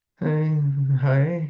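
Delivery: cold, unenthusiastic. Demonstrating greetings that are too hot, too cold, or just right: cold unenthusiastic greeting. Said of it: "Too cold would be kind of that".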